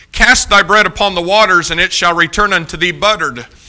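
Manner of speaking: normal talking voice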